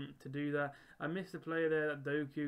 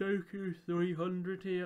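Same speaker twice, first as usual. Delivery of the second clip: talking through a yawn, much slower; 4 semitones higher, 4 dB louder than usual. Going over player sales and coin profits, yawning while talking. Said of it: "I was yawning there".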